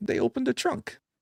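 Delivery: put-on Russian accent with a lilt. Retelling what the interpreter said after being kidnapped: imitating Joe, Russian-sounding accent. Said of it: "I don't know why mine sounds Russian".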